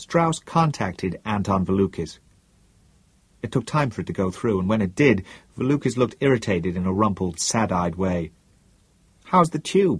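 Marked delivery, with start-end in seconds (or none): 9.2-10.0 kind, gentle, higher-pitched voice. Strauss, on a call with an irritated Valukis, asks: gently. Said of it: "asked Strauss gently".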